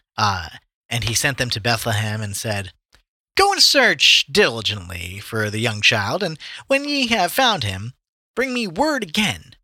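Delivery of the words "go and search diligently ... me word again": weird, nerdy gangster character voice. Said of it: "I like your Herod voice".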